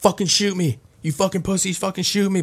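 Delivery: mock taunting yell. Describing a man in a video in a parking lot, retelling his yelling. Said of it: "He's yelling".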